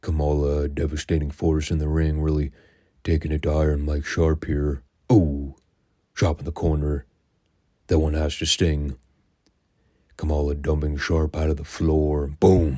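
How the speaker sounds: put-on, completely deadpan, unexcited, flat commentary voice. Picturing Skandar Akbar calling Kamala's matches: Skandar Akbar mock-dry delivery. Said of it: "the completely dry intonation behind all of Akbar's delivery".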